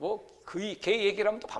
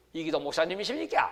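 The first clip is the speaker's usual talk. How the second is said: put-on Busan regional dialect accent. Retelling a phone call from people in busan, the speaker uses busan dialect. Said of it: "부산 사투리로".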